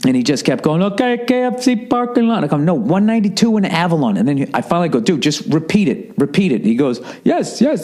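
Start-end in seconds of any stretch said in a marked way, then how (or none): 2.6-4.2 mock angry yell, correcting tone. Retelling correcting a man on the phone, retelling an angry yell. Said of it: "I'm literally getting angry, yelling".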